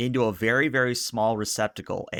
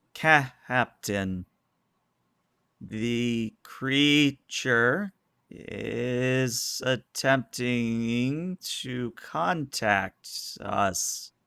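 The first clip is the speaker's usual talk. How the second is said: very slow, stuttering drawl, syllables oddly stressed; 2 semitones higher than usual. Voicing R'hllor's line the way G-Man from Half-Life talks: halting G-Man voice. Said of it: "in the G Man voice. So, sort of a stuttering, uh, almost like syllables are said at the wrong points in words".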